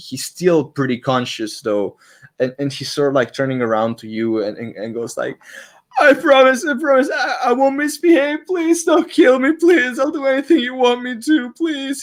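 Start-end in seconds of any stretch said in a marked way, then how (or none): 6.0-12.0 tearful, desperate crying, pitched way up. A beaten fighter drops his sword and turns to his attacker, begging while crying. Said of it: "Is like crying to the floor".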